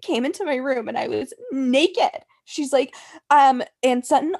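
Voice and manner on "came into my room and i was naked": words spoken through tears, crying. Retelling what Crystal told Kyle: imitating someone crying. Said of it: "She starts crying, you guys".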